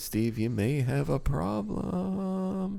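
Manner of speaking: very high-pitched comedian voice. Joking about keeping bottles, doing a Jim Gaffigan voice. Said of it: "That's my Jim Gaffigan voice".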